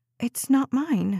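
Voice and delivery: stammering out words. Kimmy, caught by Chuck with a cell phone, answers him: stammering. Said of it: "Kimmy stammered".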